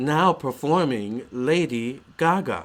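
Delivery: slow, booming announcer voice. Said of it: "her as an announcer".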